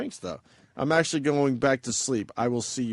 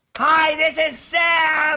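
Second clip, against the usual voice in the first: very high-pitched, loud voice; 13 semitones higher, 7 dB louder than usual. Doing a requested impression for the others: imitating Sam. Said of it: "do the Sam one again there, [name]".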